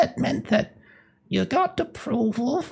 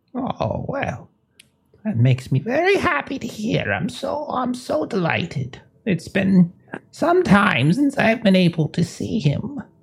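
put-on elderly woman's voice, in her eighties; 3 semitones lower than usual. Role-playing a mother hearing visitors report on her son Douglas, as an elderly woman in her 80s. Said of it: "She's older woman in her 80s".

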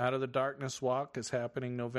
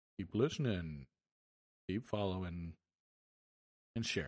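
put-on, pleasant, deep, low voice; 6 semitones lower, 3 dB quieter than usual. Signing off, telling listeners to keep listening and share, in a nice low voice. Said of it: "in my nice low voice".

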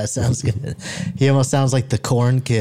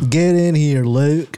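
drawled Southern accent, farmer voice; 4 semitones higher, 3 dB louder than usual. Joking about how the Skywalkers talked, calling Luke in, Skywalker family Southern drawl. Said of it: "that's how the Skywalkers talked".

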